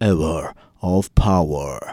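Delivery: deep put-on radio announcer voice. Introducing himself, then dropping into his radio voice: radio voice. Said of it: "It's my radio voice right there".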